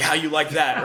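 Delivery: angry yell. Imagining someone at work suddenly yelling at their boss, acting out the yell. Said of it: "you start yelling at your boss".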